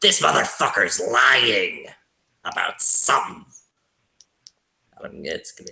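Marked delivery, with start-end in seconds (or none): 0.0-3.4 crackling, crackly dwarf voice in dwarf language. Voicing a character speaking a secret warning in crackly Dwarvish. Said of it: "in kinda crackly Dwarvish".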